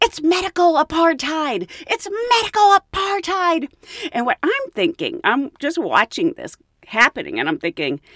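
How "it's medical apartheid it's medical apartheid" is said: put-on very high, piercing, shrill yell. Retelling a flight attendant yelling about the test: imitating someone yelling. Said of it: "And then she started yelling".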